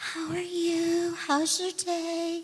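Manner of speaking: high, slow, sweet motherly voice. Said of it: "just so sweet".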